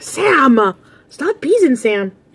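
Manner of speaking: mock very slow, high playground jeer, name stretched. Retelling how a group of kids taunted them: imitating kids yelling. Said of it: "I heard them yelling".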